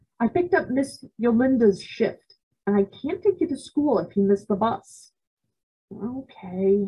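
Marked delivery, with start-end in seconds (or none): 5.9-6.9 drowsy, barely awake, half-asleep mumble. A narrator reads the narrator's reply to being told to get ready for school, mumbled, half asleep. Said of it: "I mumbled, still half asleep".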